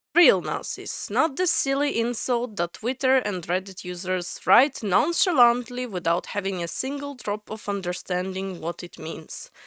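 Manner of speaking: ordinary talk, nothing marked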